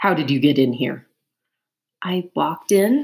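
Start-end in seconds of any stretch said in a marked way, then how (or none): 2.0-3.0 strained, forced calm. A woman answers a rat who demands how she got in, with forced calm. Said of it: "keeping her voice calm with effort".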